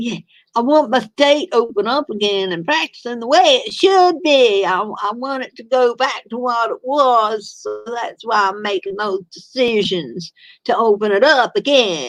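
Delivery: horrible, bad, put-on Southern accent. Reading the Six of Cups, the speaker voices him in a horrible southern voice. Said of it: "I know it's a horrible southern voice".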